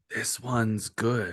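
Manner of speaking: hushed whispering voice. Game master voicing a voice the players hear in their minds: whispering voice. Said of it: "a whispering voice in your mind say".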